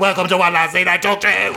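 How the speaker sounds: mild, light shouted voice. Welcoming listeners to the show by its title: shouting. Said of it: "and then with a shout".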